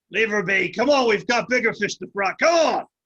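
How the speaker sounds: straining, urging voice. A game master voices a man pulling a growling creature away, straining and urging. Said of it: "he's pulling on the thing".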